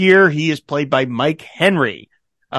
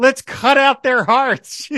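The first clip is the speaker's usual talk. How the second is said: put-on screaming rally-speech voice, higher; 10 semitones higher than usual. Retelling a speech where Margaret screams at the team: imitating Margaret screaming. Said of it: "she starts screaming at the top of her lungs".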